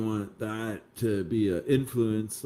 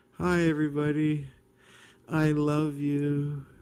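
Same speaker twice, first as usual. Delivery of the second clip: put-on sweet, gentle voice, high and slow; 5 semitones higher than usual. Mocking how one must speak on YouTube: mock nice and soft voice. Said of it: "We gotta talk nice and soft".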